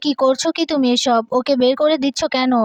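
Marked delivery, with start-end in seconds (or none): none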